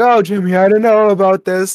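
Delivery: acted, high-pitched, nervous, anxious fretting. Retelling a scene where a mother hesitates at a slide: imitating a panicked mother. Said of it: "Mary's freaking out".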